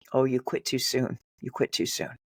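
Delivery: put-on desperate whisper. Retelling words a voice whispered to them: imitating a desperate whisper. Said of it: "a voice whisper to me desperately".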